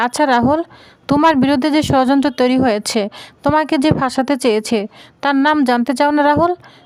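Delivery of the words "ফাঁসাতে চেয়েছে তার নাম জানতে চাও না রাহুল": plain reading voice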